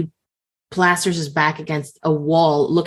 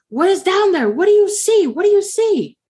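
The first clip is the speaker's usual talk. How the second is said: mock very high, drawn-out screaming; 4 dB louder than usual. Telling a story, speaker acts out a man screaming back a question: imitating a man screaming back. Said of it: "he's like screaming back".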